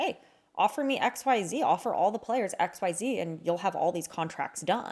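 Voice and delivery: ordinary talk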